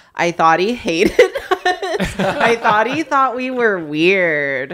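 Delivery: slow, laughing, disbelieving delivery.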